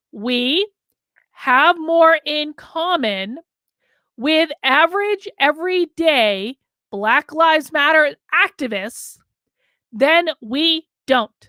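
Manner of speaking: slow, deliberate delivery, spelled out word by word. Speaker making a point to people who don't seem to understand, speaking slowly. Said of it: "I'm going to speak slow".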